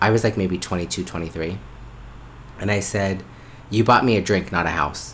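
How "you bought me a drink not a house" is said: joking tone, much faster. Retelling what the speaker said to a man who bought a drink, jokingly. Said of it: "I jokingly say that".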